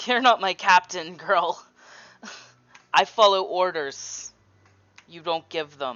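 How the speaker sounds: cocky, smug, mocking, taunting pirate voice. Voicing a smirking pirate answering Mary in a game: smug smirking pirate. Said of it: "shit-eating smirk on his face, and he just goes".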